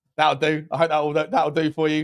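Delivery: ordinary delivery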